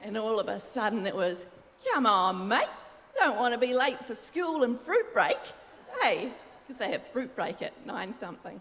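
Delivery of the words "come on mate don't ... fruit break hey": put-on joyous, confident, loud, sing-song Aussie accent. Recalling snapping into a character while wearing a wide-brimmed hat, put-on joyous Aussie accent. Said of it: "confident character with an Aussie accent".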